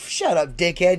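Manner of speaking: ordinary delivery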